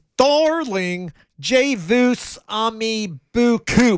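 Pittsburgh-style accent. Trying a French phrase again, the speaker says it in a Pittsburgh accent. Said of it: "I'll do it in a Pittsburgh accent here".

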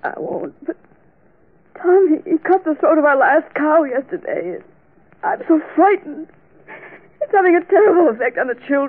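high-pitched, tearful speech, weeping through the words. Gertrude answers the one comforting her, crying while she talks. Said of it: "Please stop crying".

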